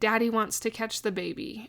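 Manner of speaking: ordinary talk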